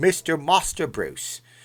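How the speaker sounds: condescending, talking-down Cockney British accent. Show how you would do a British voice for a moderator from the UK: Michael Caine voice, Cockney British accent. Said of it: "the Michael Caine voice".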